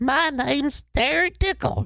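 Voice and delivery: creepy put-on voice, very high and drawn-out. Redoing the screen name in a creepier voice: even creepier put-on voice. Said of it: "that sounds even creepier".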